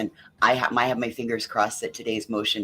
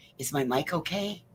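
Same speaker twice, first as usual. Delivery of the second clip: hushed whisper, pitched higher; 6 semitones higher, 4 dB quieter than usual. Greeting the others and asking how the mic sounds: whispering. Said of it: "you're whispering".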